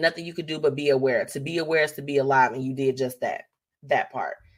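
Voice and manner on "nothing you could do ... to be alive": ordinary delivery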